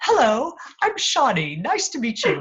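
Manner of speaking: fake British accent, sing-song. Retelling a pretend introduction game played in the car, in a fake British accent. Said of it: "I get on my sort of fake British accent".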